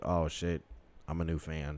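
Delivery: normal talking voice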